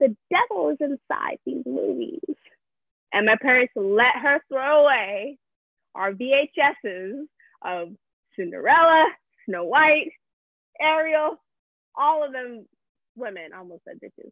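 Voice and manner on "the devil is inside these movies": put-on creaky small child's little girl voice. Quoting what a girl told the speaker's parents, in a little girl voice. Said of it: "in her little girl voice".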